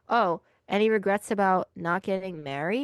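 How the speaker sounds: ordinary delivery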